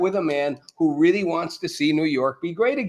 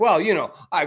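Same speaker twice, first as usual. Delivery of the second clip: imitated stammering. Retelling how Mamdani dodged a reporter's question: imitating someone stammering. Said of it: "He's like".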